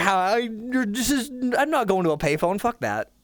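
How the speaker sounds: high, flustered, sputtering, stammering panic. Retelling own past words when the phone stopped working: own flustered panic. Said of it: "I'm like".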